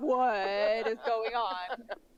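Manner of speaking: very loud, very slow, drawn-out cry. Voicing a character reacting to a strange event: very loud. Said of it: "Very loudly, she says this".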